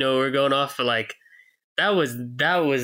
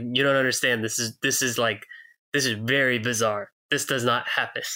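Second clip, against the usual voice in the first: ordinary talk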